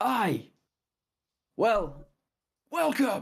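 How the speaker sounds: loud, booming voice pitched very high. Narrating a scene to listeners, voicing a newly heard character: loud booming voice. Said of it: "this loud booming voice says".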